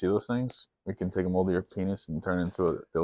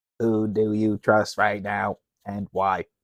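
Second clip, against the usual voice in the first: very slow, flat robotic monotone, word by word, tuneless. Asking the next interview question like Stephen Hawking, Stephen Hawking voice. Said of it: "I'm gonna ask the next question like Stephen Hawking".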